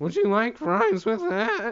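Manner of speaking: goofy, high, swooping cartoon dude voice. Mocking how everyone on the internet sounds, Simpsons character voice. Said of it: "Like the dude from fucking".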